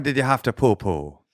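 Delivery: put-on Irish accent. Saying the line in an accent the other person calls out: Irish accent.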